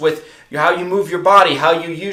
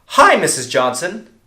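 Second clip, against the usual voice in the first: energetic, lively, excited, upbeat delivery. Demonstrating sales tonality on an opening greeting, excited. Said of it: "I'm starting out excited".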